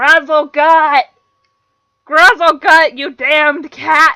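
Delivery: put-on very loud, high, slow old-hag yell, far-off sounding. The game master voices a hag calling after her cat, yelling. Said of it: "this hag-looking woman turns to look at all of you. / She points a bony green finger at all of Yes. you. And she's hunched over, got this gray, very cluttered, unkept hair. / this hag-looking woman tu".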